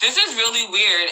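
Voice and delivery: ordinary talk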